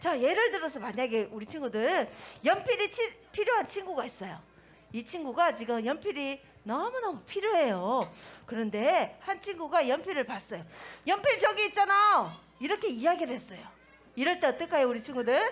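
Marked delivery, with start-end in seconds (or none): 11.1-12.4 high, loud, blunt delivery. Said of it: "이렇게 큰 소리로 이야기한다면은".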